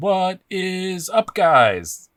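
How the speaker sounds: bad, very high, shrill, very slow drawn-out delivery. Imitating how a reviewer opened every Knife Banter video: bad Knife Banter host impression. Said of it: "sorry for the bad impression".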